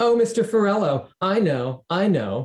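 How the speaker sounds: very high, slow, drawn-out mocking taunt. A boy mocks a classmate by mimicking his answer in class; mocking imitation. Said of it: "Kevin mimicked my voice and hand gestures".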